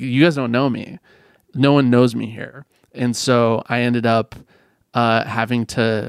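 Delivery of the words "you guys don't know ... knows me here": ordinary talk, nothing marked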